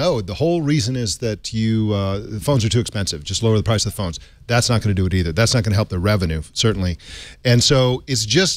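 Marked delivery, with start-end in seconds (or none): none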